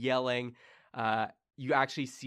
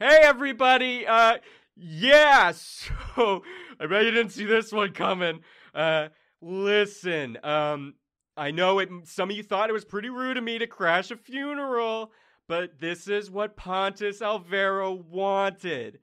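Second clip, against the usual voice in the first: booming, echoing god voice, louder; 8 semitones higher, 9 dB louder than usual. Voicing the God of Bliss addressing a funeral crowd: booming god voice. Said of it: "the booming voice echoes so all can hear".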